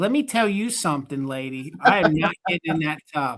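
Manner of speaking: in-character cat voice. Describing a cat picture, speaking for the cat: voicing a cat. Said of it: "and that cat's like".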